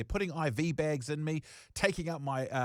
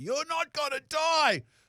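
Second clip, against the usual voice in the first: put-on high, loud, drawn-out yell through tears; 12 semitones higher, 5 dB louder than usual. Retelling the brother yelling at the speaker near the hospital, retelling a tearful yell. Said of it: "my brother looks at me and yells through tears".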